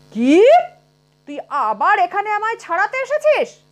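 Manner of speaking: roaring angrily. Reading a tale where a possessed girl's spirit confronts a porter: roaring angrily. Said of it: "গর্জন করে বললে".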